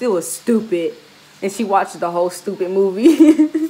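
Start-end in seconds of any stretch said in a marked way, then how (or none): none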